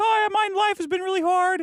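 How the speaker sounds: put-on squeaky, very high childlike tone. Retelling how a guy on the Maury Povich show talked: imitating a childlike high voice. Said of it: "this guy who talked like this".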